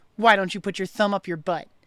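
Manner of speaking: ordinary talk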